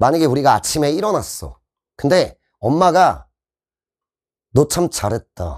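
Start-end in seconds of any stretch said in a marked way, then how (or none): 4.5-5.6 flat, expressionless deadpan, lower and slower. Speaker acts out a mother's remark as an example for students, deadpan and expressionless. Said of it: "무표정".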